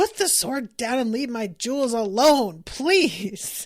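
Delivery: loud hollered shout. Retelling a scene in which Luffy yells: imitating Luffy yelling. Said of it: "He's just yelling".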